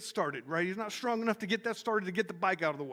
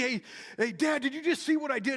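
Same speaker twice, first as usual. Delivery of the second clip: mock child yelling, higher pitch; 5 semitones higher, 4 dB louder than usual. A dad retells his kid calling out for his attention, retelling a child's yell. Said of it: "he's yelling to get my attention".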